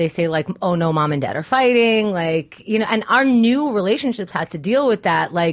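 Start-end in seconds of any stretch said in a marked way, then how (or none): none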